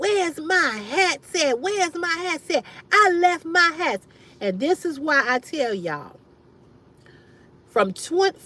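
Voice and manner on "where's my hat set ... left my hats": high, loud screaming and hollering. Recounting a man calling the speaker after his things were dumped: imitating someone screaming and hollering. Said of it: "screaming and hollering".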